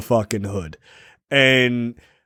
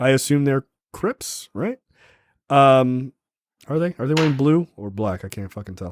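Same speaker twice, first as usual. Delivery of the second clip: ordinary delivery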